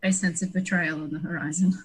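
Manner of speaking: soft, hushed, secretive leaned-in aside. Leaning in to another player, saying the line very quietly. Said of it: "lean into Fires very quietly and be like".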